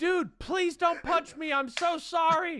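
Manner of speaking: very high, loud yell. Retelling being threatened from across a street, the speaker re-enacts the reply: retelling a yell. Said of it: "I yelled from across the street".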